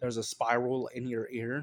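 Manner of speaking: plain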